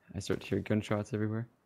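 normal talking voice

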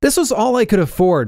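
very high-pitched, defensive voice. Riley replying to someone's sarcastic remark, defensive. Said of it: "Riley said defensively".

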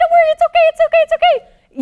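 very high, loud, anxious, worried soothing voice. Showing how owners talk when comforting a fearful dog: anxious comforting voice. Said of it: "you talk like this".

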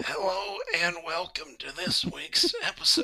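shrill, very high, swooping sing-song put-on voice. Doing an impression that turns into Steve-O. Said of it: "I kinda just turned it into Steve-O".

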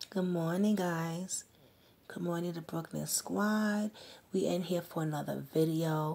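soft, hushed, quiet voice, kept down. Vlogger greets viewers in the morning while the fiance sleeps, talking low. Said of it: "I'm talking low because my fiance is sleeping".

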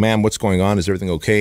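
ordinary talk

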